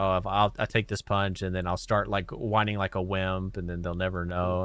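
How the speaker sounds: plain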